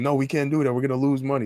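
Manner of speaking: high, protesting, shouted yell. Retelling haggling over bikes, acting out the jamaican guys yelling back. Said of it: "the Jamaican guys are yelling".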